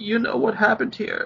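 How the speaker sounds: frightened, scared, high and rushed. Narrating a game scene, a tearful woman holding him speaks in a frightened tone. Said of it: "in a frightened tone".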